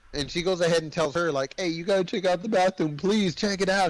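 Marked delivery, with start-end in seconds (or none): 1.6-3.9 mock frantic, panicked, urgent begging. Retelling a movie scene where a girl begs her friend: imitating a panicked plea. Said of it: "She's, like, panicking".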